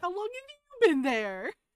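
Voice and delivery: very high, shrill, very loud woman character voice. Repeating a line that got cut off, as a lady character: somewhat high-pitched lady voice. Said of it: "sort of like high pitched".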